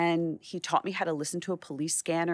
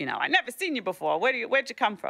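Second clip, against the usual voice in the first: put-on gruff voice, much higher; 6 semitones higher than usual. Retelling a photo editor's questions at their first meeting, imitating a very gruff editor. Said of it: "very gruff".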